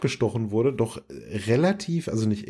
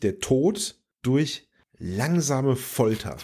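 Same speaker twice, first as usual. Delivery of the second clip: langsam slowed, leaned on, savored. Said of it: "Betonung auf langsam".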